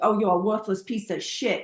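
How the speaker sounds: light, slight put-on New York accent. Describing how a girlfriend voices her inner critic, in a little new york accent. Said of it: "she gives it like a little New York accent".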